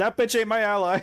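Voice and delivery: put-on yelling. Retelling what another player just yelled out: imitating someone yelling. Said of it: "Skip just yelled out".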